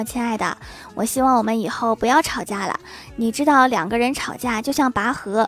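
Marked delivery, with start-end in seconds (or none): none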